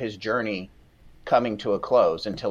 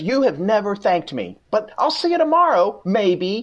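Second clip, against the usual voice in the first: acted-out overdone sarcasm, very high and loud; 11 semitones higher, 5 dB louder than usual. Reading out a man's message to a listener, mimicking someone's sarcasm. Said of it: "you're putting way too much sarcasm into it".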